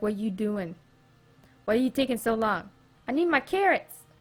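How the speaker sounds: talking horse character voice. Voicing the horse as it waits for carrots: voicing a horse. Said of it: "My horse is like".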